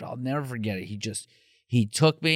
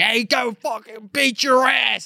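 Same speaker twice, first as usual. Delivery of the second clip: put-on high-pitched Pittsburgh yinzer accent; 9 semitones higher than usual. Recounting a man who confronted them, in a Pittsburghese yinzer accent. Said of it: "he's a yinzer too, so he's like".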